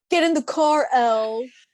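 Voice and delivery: acted, furious, loud, high-pitched angry yell. Recounting a character slamming his hand down on a car, imitating an angry yell. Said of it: "just yells".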